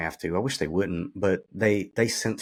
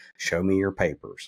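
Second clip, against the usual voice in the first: put-on American Southern accent. Describing police checkpoints, imitate an officer's demand in a Southern accent. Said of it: "a Southern accent can say".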